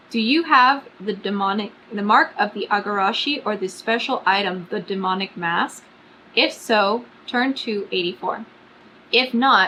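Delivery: ordinary talk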